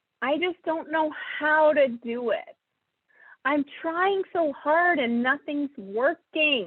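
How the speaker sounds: slow, whiny, self-pitying, complaining tone. Voicing self-pitying thoughts as they sound in the head, whiny voice. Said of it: "I'm using this whiny voice because this is what it sounds like in my head".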